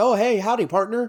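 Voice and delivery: high, folksy Texan accent. Showing how they throw in Texasisms: doing a Texasism. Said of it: "have my Texasisms".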